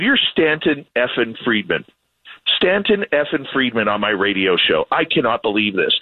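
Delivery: ordinary delivery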